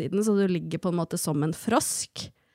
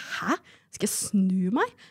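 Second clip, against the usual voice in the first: acted, mock-shocked voice. Retelling her reaction the first time she did it, acting out her past shock. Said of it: "Jeg ble jo helt sjokkert da".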